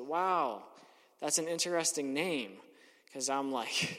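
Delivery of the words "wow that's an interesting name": put-on, lightly sarcastic, half-sarcastic tone. Retelling a remark about a cafe's name: retelling a half-sarcastic remark. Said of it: "I half sarcastically said".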